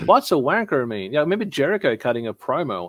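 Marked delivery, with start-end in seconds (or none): 0.1-1.1 poor, clumsy put-on American accent. Imitating WWE people asking what a local word means: bad American accent. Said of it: "That was my worst American accent then".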